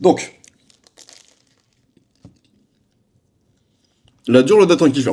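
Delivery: talking with mouth full. A YouTuber restates the topic to viewers while eating, talking with mouth full. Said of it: "Pardon, je parle la bouche ouverte. La bouche pleine".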